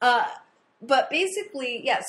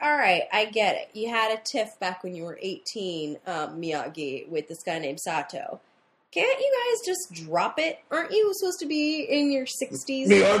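usual speaking voice

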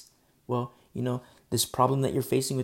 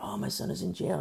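mock tearful voice with swooping sing-song pitch; 4 dB quieter than usual. The speaker recalls mothers phoning him; imitating a crying mother. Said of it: "they're crying".

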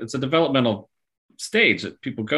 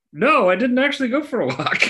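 very high put-on dog voice; 14 semitones higher, 3 dB louder than usual. Voicing the dog's reply about the walk: dog voice. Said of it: "in the dog voice".

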